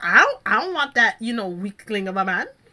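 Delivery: revolted, disgusted and dismissive tone. Retelling how Pascal reacted, so disgusted: imitating disgusted Pascal. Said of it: "He was so disgusted".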